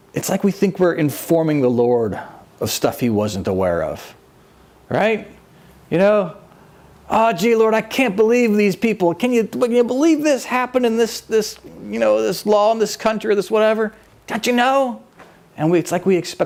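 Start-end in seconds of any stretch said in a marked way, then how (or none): 7.1-15.0 play-acted, pitched-up, tattling complaining tone. Imitating people complaining to the Lord: imitating complaining to the Lord. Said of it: "when we complain".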